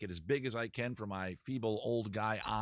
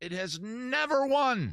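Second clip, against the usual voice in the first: high, frustrated, loud yelling; 13 semitones higher, 7 dB louder than usual. Announcing the results of a vote by his followers, yelling. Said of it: "Sorry, I'm yelling".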